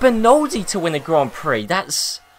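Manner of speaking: surprised, caught off guard, trailing off unfinished. Commentating on a Grand Prix, reacting to the winner: surprised. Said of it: "I don't know why I sound so surprised".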